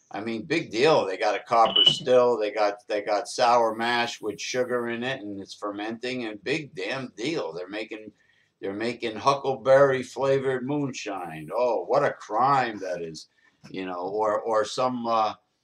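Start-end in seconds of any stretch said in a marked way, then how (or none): 11.5-13.2 fake shocked outrage, dripping with irony. Dismissing a moonshine arrest, sarcastic mock outrage. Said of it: "I'm being sarcastic".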